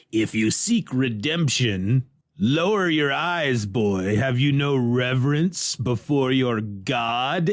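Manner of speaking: demon voice with "God" drawn out. Recapping a story where a demon speaks from a shrine, demon voice. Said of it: "the demon's voice comes out of the shrine".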